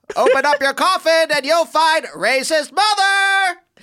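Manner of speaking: very high, loud, slow, booming, shrill, drawn-out yell. Joking about a dead mother in her coffin: imitating Oprah yelling. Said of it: "that's Oprah yelling at him in bed".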